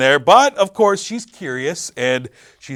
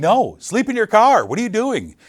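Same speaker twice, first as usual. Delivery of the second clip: high-pitched yell; 8 semitones higher than usual. Retelling a reaction to a horror movie character: retelling own yell at screen. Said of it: "I'm yelling".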